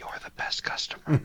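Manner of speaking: hushed, close, intimate whisper. Narrator voicing a character who comes up to the player's ear, whispering. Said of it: "He comes up to your ear and whispers".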